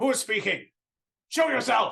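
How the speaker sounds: shrill, very high, rough barbarian bellowing yell. In a game scene, the barbarian character calls out, barbarian yelling. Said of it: "Why is the barbarian yelling?".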